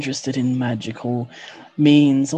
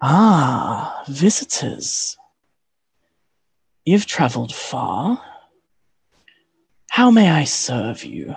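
slow, unhurried lordly voice, drawn-out "Ah". Voicing a lord greeting visitors who approach: voicing the lord character. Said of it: "you hear his voice from the middle of your group".

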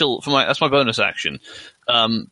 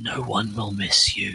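slow, soft, hushed half-whisper; 3 semitones lower, 6 dB quieter than usual. A player speaks their character's line to him, half-whispering. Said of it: "I'm assuming I can whisper to him".

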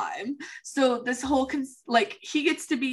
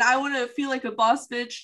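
ordinary delivery

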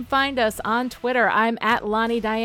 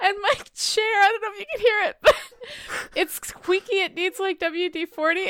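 talking through hard laughter, higher; 8 semitones higher than usual. Apologizing to another speaker for a squeaky chair: laughing hard while talking. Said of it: "I'm laughing so hard the chair is squeaking".

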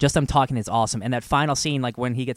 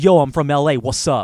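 put-on Oakland accent, louder, slower; 7 dB louder than usual. Discussing a movie, the speaker quotes a character, Killmonger impression with Oakland accent. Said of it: "That's what he sounds like".

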